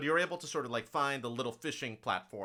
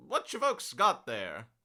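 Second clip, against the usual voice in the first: put-on old fisherman character voice; 2 semitones higher, 4 dB louder than usual. Narrator voicing an older halfling fisherman behind the players: old halfling fisherman voice. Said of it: "an older halfling fisherman behind you".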